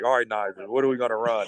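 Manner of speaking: plain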